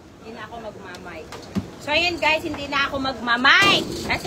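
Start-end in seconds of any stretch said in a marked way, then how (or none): 0.2-1.3 soft, fast, mumbled throwaway delivery. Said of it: "malakas naman yung boses ko".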